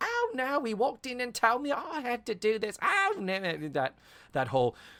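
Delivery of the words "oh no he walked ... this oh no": put-on very high, half-hearted, weak Cockney accent. Quoting a character from an episode: not-so-good cockney accent. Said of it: "I wish your Cockney accent was better".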